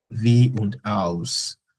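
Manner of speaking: very slow, spelled-out wie und als, drawn out.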